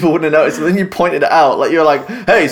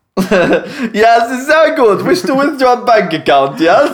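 put-on Eastern European accent, pitched higher; 7 semitones higher than usual. Riffing on a bank withdrawal line in different accents, one speaker does a Borat voice. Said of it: "That's more Borat".

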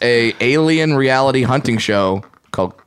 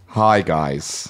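slightly lispy voice; 8 semitones lower, 4 dB quieter than usual. Joining a call between two people as Mike Pence: Mike Pence impression. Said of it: "This is my Michael Pence".

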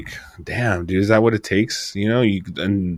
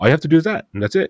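put-on brusque, businesslike therapist voice, pitched higher; 8 semitones higher than usual. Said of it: "about business he was".

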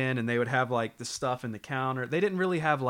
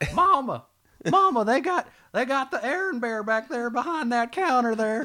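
put-on very high little Southern child voice, slow drawl; 12 semitones higher, 5 dB louder than usual. Recalling being a kid calling out to Mama: childlike Southern accent. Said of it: "me as a kid with my little southern voice, I was like".

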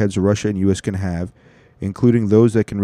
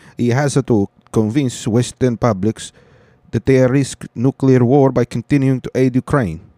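put-on unconvincing, rough Italian accent; 3 semitones higher than usual. Reading a quoted statement from a news story aloud, not-so-good Italian accent for Cirincione. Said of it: "I don't know if that was a good Italian".

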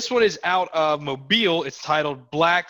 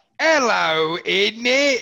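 mocking put-on British voice; 6 semitones higher than usual. Reading out a tweet mocking British people: mocking British people. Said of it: "British people be like".

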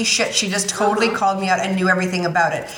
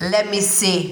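possibly bad put-on German accent. Speaker retells asking the woman who did her wax about a reaction, imitating Jacqueline's German accent. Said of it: "I don't know if that's a good German accent or not".

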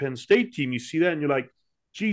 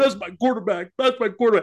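high voice, words pushed out through mock crying; 5 semitones higher, 4 dB louder than usual. Retelling a football player crying after a lost playoff game: imitating Terrell Owens crying. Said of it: "Then Terrell Owens cried".

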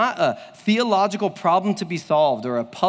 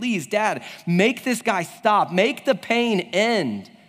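acted, tearful, crying, pleading child's voice; 3 semitones higher than usual. Retelling a friend's story of his daughter at the doctor's, imitating a crying child. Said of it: "She's crying".

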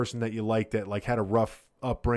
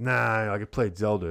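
plain

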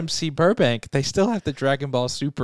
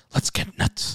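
breathy, breathed-out whispered delivery. Quoting a Batman movie line, Michael Keaton's Batman voice. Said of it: "in the voice of Michael Keaton's Batman".

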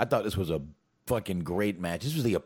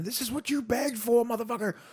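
put-on, very high, screamed voice. Retelling what Big E screamed on the apron during the match: imitating Big E screaming. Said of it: "And I love that he was screaming".

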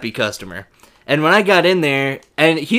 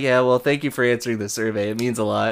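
mock offhand, unbothered, casual, nonchalant delivery; 3 semitones lower, 5 dB quieter than usual. Retelling a friend's call about a survey: imitating Jeeves, nonchalant. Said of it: "Just so nonchalant".

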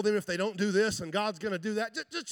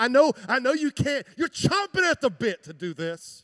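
put-on, knowing tone laced with sarcasm; 4 semitones higher, 4 dB louder than usual. Retelling what Paul tells the church about giving: imitating sarcastic tone. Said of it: "He just laces it with sarcasm".

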